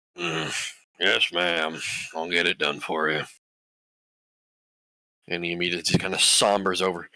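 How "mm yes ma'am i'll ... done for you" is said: grunting half-orc character voice. Narrating a half-orc who stands up to answer a request, grunting half-orc voice. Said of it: "kind of grunts as he stands".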